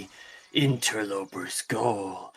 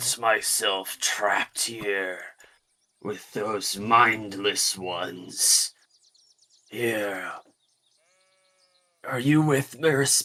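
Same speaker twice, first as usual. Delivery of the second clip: put-on raspy, rough, gruff, older-sounding voice. Playing a game character who greets a stranger, in a raspy, older, gruff voice. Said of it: "a very raspy, sort of older, gruff voice".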